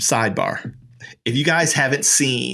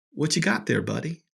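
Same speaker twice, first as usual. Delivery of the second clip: quick, ever-so-sweet, overly kind, friendly tone; 3 semitones higher, 6 dB quieter than usual. Retelling what a man at the hospital asked him, retelling a kind question. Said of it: "ever so kindly".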